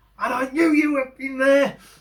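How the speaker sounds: shrill, very high shout. Retelling how a man stomped off shouting at him, imitating someone shouting. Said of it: "And he's shouting".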